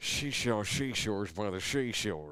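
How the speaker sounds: put-on West Virginia accent. Acting out a Silence of the Lambs scene: Jodie Foster West Virginia accent. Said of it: "Jody's West Virginia accent".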